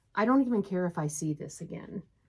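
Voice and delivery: ordinary talk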